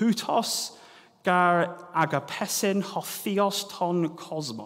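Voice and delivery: bad Greek accent, poor pronunciation. Reading a Bible line aloud in Koine Greek: terrible Koine Greek accent. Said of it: "please excuse my terrible accent".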